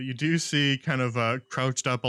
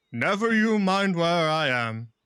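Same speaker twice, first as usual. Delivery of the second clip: loud booming voice, louder; 6 semitones higher, 4 dB louder than usual. Voicing an unseen figure demanding a bridge toll: booming voice. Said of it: "a voice booms out loud".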